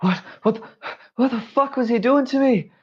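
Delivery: panicked and fearful. Voicing a character waking up after being healed: panicked. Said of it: "you see him panic".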